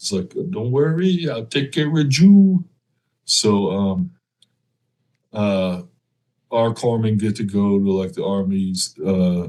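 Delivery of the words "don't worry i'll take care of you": put-on heavy, laid-on Puerto Rican accent, pitched up. Retelling the first sergeant's answer to your team leader, in Santiago's thick Puerto Rican accent. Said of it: "so got that thick accent".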